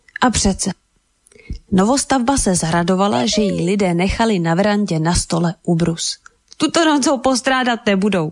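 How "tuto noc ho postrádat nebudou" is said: laughing, amused, said through a laugh. Narrator reads the new house speaking of the tablecloth left out, laughing. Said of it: "zasmála se".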